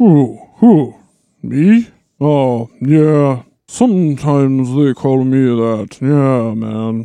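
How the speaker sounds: dazed, out-of-it, spaced-out, intoxicated-sounding voice. A witness in court is asked if he is Gandalf, intoxicated Gandalf voice. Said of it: "The witness is clearly intoxicated".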